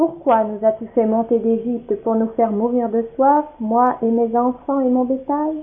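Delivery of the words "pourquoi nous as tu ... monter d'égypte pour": plain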